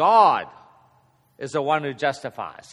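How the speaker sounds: stress on "GOD". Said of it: "the emphasis is on who? God".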